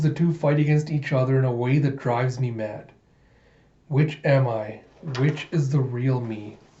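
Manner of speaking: ordinary talk, nothing marked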